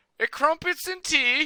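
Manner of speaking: deliberately awful, horrible British accent, pitched very high. Answering a request to share a British accent: horrible British accent. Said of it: "How's your British accent?".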